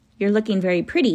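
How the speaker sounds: ordinary delivery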